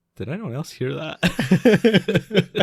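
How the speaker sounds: high, slow, puzzled tone. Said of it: "everyone kinda looks around like".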